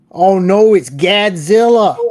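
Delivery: put-on Boston accent. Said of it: "Can you do a Boston accent?".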